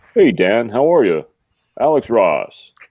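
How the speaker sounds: very smooth, deep-toned, easy voice. Describing how a man from Illinois greets Dan, smooth deep Alex Ross voice. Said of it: "very smooth and deep".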